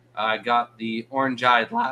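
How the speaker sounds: voice breaking. Host talks about a new kind of shrimp he got, voice cracking. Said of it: "voice is cracking".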